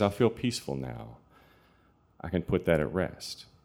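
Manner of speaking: normal talking voice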